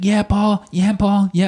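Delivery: mock, high, random background yelling. Retelling a friend of the show in the background: imitating Matt Nix screaming. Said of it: "screaming, like, random things in the back".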